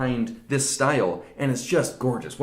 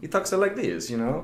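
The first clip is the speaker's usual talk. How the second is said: clumsy, bad put-on Italian voice; 4 semitones higher than usual. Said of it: "that was a bad, bad interpretation".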